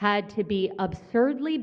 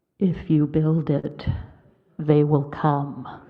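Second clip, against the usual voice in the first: deep, booming god-like voice; 5 semitones lower, 5 dB louder than usual. Quoting the voice from the sky in Field of Dreams, in a booming sky voice. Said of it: "I've got a booming God voice".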